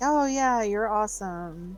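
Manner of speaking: put-on bored, distracted, absent-minded tone. Showing how a parent ignoring their child praises: imitating a distracted parent's praise. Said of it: "the parent who is ignoring their child".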